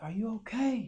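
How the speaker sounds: frantic, dazed, high, loud scream. Speaker recounts stopping a truck after a crash, retelling screaming at someone. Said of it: "I'm like screaming at them".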